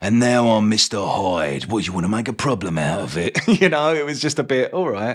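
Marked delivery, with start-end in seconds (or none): 0.0-3.4 threatening, menacing put-on Cockney accent, tough. Acting out a villainous persona greeting a stranger and then snapping at him, in an imitation of a menacing Cockney. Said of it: "It was kind of like".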